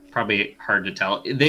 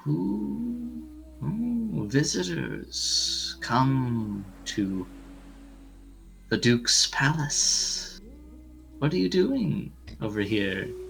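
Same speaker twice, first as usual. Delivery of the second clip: high, ghostly, ethereal half-whisper; 5 semitones higher, 5 dB quieter than usual. Narrator voices a voice on the wind addressing the players: ethereal half-whisper. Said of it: "sort of like ethereal whisper".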